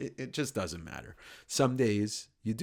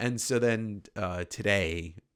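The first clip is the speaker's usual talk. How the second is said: ordinary talk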